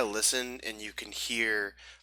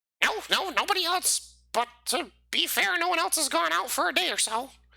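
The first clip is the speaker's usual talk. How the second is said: high-pitched goblin creature voice; 4 dB louder than usual. A game narrator voicing one of two goblins talking on the trail, in a goblin voice. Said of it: "you hear two goblins talking".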